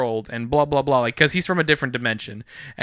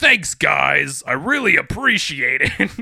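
slow, heavy, dragged-out voice-modulator sound; 4 dB louder than usual. Retelling a video game glitch where a heroine got another character's voice: the Thing's voice. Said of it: "she sounded like the Thing".

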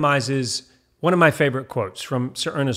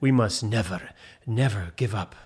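low-pitched, put-on British accent; 4 semitones lower, 3 dB quieter than usual. Quoting a famous line while talking about hard work, doing a Winston Churchill impression. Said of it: "Not really sure how good that accent is".

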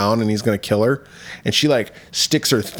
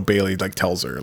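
ordinary talk, nothing marked

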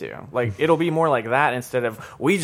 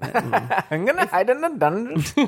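higher-pitched, unconvincing attempt at British accent; 7 semitones higher than usual. Retelling what Sansa said, attempting a British accent as Sansa. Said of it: "that was like an Indian/Pakistani".

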